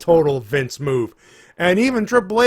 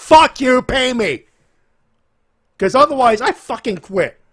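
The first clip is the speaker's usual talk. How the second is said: high, furious, angry shouted rant; 8 semitones higher, 4 dB louder than usual. Ranting about the wrestling company while yelling at a wall, yelling. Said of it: "I'm yelling at a".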